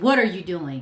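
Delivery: put-on authoritative voice. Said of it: "the power in my voice when I said".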